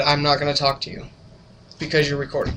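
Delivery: straight-faced tone. Retelling what the front desk lady told the brother: imitating a deadpan reply. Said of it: "with a very, very straight face".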